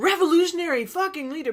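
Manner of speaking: big, forceful voice. Showing how a written phrase read to them: with a big voice. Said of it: "for me it read with this big voice".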